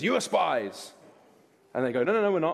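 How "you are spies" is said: gruff, rough, hard-edged voice with accusing tone. Narrating Joseph's words to those bowing before him, in Joseph's rough voice. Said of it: "He speaks to them roughly and says".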